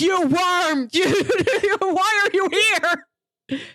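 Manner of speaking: mock, very slow, drawn-out, high possessed yelling. Retelling a possessed teacher's outburst at a student: imitating someone yelling. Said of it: "yelling at him".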